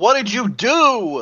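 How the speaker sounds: very high shout with "do" drawn out. Playing Samantha as the mountain shakes violently: yelling in character. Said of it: "Samantha yells".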